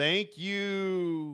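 ghostly moan, "you" drawn out. Narrating a scene, the forgiven ghost thanks them before vanishing, moaning ghost voice. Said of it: "the ghost moans".

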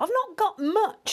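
very high-pitched, muttering mouse voice. The Country Mouse, searching for food for his visiting friend, muttered. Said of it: "he muttered".

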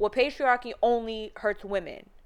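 plain

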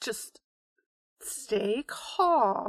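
calm hushed voice. In a role-playing game, trying to keep CC calm, in a soothing, quiet voice. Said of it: "I'm gonna keep talking in a soothing, quiet voice".

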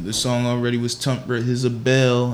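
plain

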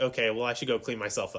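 ordinary talk

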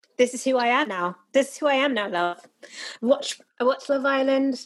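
American speaker's laid-on put-on British accent. Retelling TikTok stitches replying to a British woman, mock British accent. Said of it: "stop doing the British accent".

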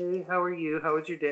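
quick, melting, melt-in-your-ear voice. Retelling a woman's phone call, imitating her soft, melting voice. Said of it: "she's got a melting voice".

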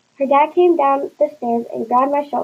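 plain

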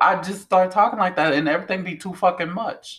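forced, slurred, high-pitched, exaggerated Louisiana accent. Speaker showing how they start talking when it happens, forced slurred louisiana accent. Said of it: "Is that Louisiana coming out?".

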